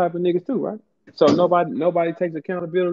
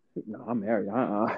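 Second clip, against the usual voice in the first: smug voice, lower in pitch and quieter; 9 semitones lower, 9 dB quieter than usual. Imitating a friend who keeps saying he is married: imitating Gerald sounding smug and safe. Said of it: "like he was so safe".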